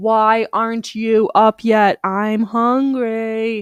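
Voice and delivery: very drawn-out, very slow, hungry, demanding cat voice. Retelling the cat being loud this morning: voicing the loud hungry cat. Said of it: "He was so loud this morning".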